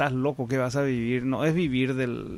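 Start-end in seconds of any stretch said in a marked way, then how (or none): none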